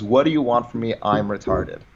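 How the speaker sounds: ordinary talk, nothing marked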